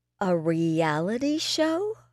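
slow, unhurried, deliberate, drawn-out delivery. Responding to another person's offer, slowly. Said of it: "I said slowly".

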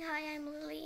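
ordinary talk, nothing marked

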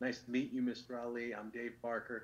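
very quiet, hushed, super polite tone. Retelling a player greeting a boxing champion: imitating a quiet, super polite greeting. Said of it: "who's quiet and super polite".

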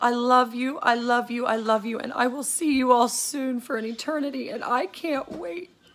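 sobbing hard, crying openly through every word. Speaking to friends while saying goodbye, ugly crying. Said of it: "Sorry for ugly crying".

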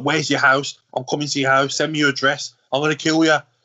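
put-on fast, furious, fuming rant. Retelling the group chat after a fish smell in a new car; imitating Fabian fuming. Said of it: "Fabian's fuming".

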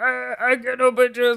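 very high, squeaky impression voice.

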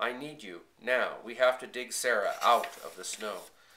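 ordinary delivery

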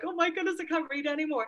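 high, overwhelmed, aghast outburst.

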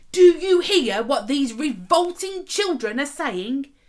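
loud, rude shout. A priest turns on a man in front of the children: rude shout. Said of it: "Silas shouted at him rudely".

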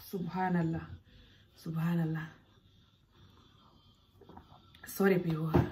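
soft voice, fighting back tears. Telling of suffering in child marriage, the speaker apologizes to viewers, holding back tears. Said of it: "I don't want to cry in this video".

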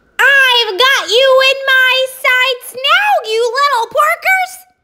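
high-pitched, cackling witch voice. A narrator reads the witch Gritch's line as she circles over the farm: cackling Gritch voice. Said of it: "she cackled".

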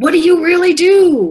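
put-on shrill, high, loud, drawn-out bark. Retelling a customs officer questioning at the booth: imitating a barking officer. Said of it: "he barked again".

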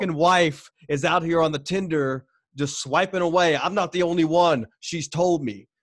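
furious, exploding, angry blow-up. Retelling how they finally exploded at a man yelling at them: retelling exploding in anger. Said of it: "I exploded on him".

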